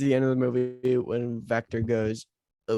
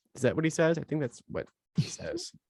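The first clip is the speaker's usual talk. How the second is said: ordinary delivery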